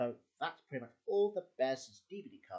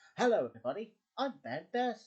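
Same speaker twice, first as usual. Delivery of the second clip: put-on pitched-up, louder teenage boy voice; 8 semitones higher, 6 dB louder than usual. Showing how the character sounded in a later series: Ben Bearson teenage voice. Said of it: "he speaks in a teenager's voice".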